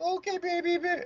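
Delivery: very high-pitched voice. Retelling how a friend answers his kids mid-game: imitating Brian. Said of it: "and he's like".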